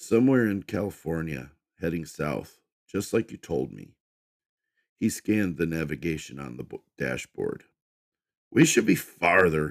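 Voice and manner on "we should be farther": loud, grumbling, complaining tone. [name] checks the dashboard navigation and complains to Fiona, grumbling. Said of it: "he grumbled".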